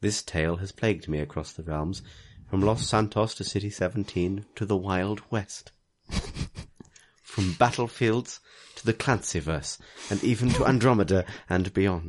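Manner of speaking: sexy, sultry, seductive voice. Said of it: "your sexy voice?".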